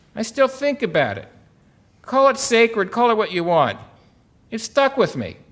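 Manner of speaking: put-on crusty Boston accent, high and loud. Quoting someone answering how the program affected him, in a Boston accent impression. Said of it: "he says in his Boston accent".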